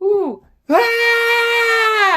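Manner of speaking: put-on loud, very high, scared little girl's squeal. Telling a story about a dog, retelling a scared girl's scream. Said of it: "and just starts screaming".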